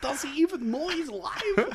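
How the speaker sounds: put-on cartoonish voice, pitched way up. Mocking the other speaker's line: Gru from Despicable Me voice. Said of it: "you sounded like, um, Gru from Despicable Me".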